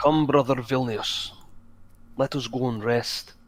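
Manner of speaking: put-on Scottish accent. Voicing a character who invites another to rest: scottish accent. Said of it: "Are you just gonna be Scottish now?".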